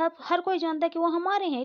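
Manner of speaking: insistent, high-pitched delivery.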